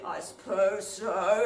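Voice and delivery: low, dark, ominous, foreboding voice. Retelling how the voice answered the narrator's small talk, imitating a foreboding voice. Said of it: "it sounded really foreboding".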